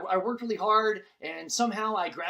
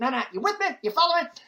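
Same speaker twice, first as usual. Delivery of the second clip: fast, loud auctioneer patter, pitched up; 7 semitones higher, 5 dB louder than usual. Doing Ross Perot on a call-in radio show: Ross Perot impression. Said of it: "He would always end every sentence by going".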